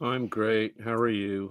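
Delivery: sounding sad. Answering a host's greeting, sounding sad. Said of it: "Why you sounded so sad?".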